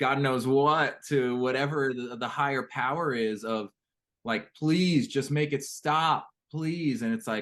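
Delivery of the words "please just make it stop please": acted, high, tearful, desperate weeping plea. Retelling a plea to a higher power: retelling a crying, screaming plea. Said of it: "I'm just crying and screaming out to God".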